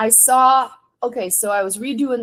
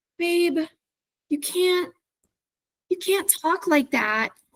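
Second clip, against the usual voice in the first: put-on embarrassed voice, pitched higher; 8 semitones higher, 4 dB quieter than usual. Retelling how the artist's wife scolded her, imitating Cricket, embarrassed. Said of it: "Her wife was just em-, so embarrassed".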